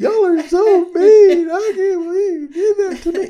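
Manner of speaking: put-on shrill, very high, loud blubbering crying wail. Retelling their complaint to the group after grabbing an electric fence, imitating own crying. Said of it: "I'm crying".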